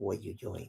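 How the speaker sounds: very hushed, very quiet voice. Speaking for the pet dog Hunter who checks on a guest: voicing the dog. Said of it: "I talk like that for him the whole time".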